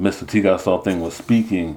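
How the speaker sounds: ordinary delivery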